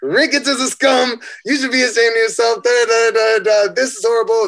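angry, shouted yelling. Retelling an argument with a man who wanted them out, retelling a yell. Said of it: "start yelling at him".

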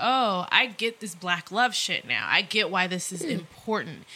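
ordinary talk

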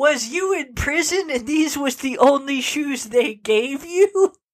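put-on indignant, outraged, thick Southern accent, pitched high. Retelling what the guy taking the shoes for repair said, mock-outraged heavy Southern accent. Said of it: "said in these just outraged, deeply Southern accent".

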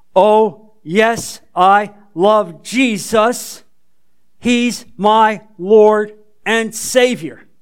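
strong, clear, powerful voice with no wavering. Retelling a teenage girl's answer to a Sunday school invitation, clear, powerful voice. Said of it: "says in a clear, powerful voice".

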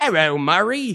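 bad, clumsy, fake Cockney accent. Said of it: "the shitty fake Cockney accent".

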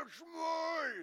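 put-on high scream from a distance, "mine" drawn out. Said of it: "He's screaming at me".

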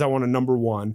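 plain

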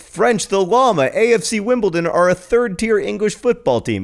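high, loud, joyful exclamation. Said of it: "it is an exclamation of joy".

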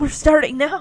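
mock choked-up voice, near tears. Speaker retells their teacher poking his head out to start, imitating a choked voice. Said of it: "like in a choked voice".

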